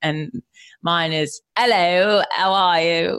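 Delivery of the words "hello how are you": put-on British accent. Asked to show their british accent, the speaker tries it: put-on british accent. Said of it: "show me your British accent".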